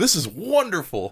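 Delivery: mock gasping, amazed and awed. Retelling how Simon gasps at a drawing: gasping in awe. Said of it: "Simon literally gasps and says".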